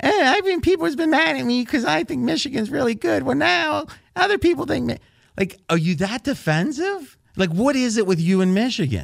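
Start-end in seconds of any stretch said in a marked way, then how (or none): 0.0-5.0 very high, whiny complaining voice. Imitating a co-host's email, mocking a whining tone. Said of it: "I could even hear the whine in your voice".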